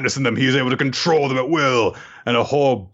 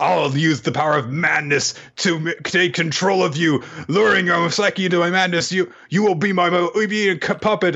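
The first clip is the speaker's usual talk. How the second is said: higher-pitched yelling; 5 semitones higher than usual. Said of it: "Stop yelling".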